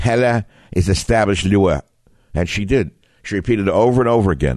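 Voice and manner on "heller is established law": put-on his own natural brogue accent. Quoting a justice's confirmation hearing remark, in his own brogue. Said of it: "i did it in my own brogue".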